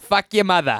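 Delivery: menacing, scary Boston tough-guy accent. Redoing a slogan line as a scary boston man. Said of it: "supposed to be like a scary Boston man".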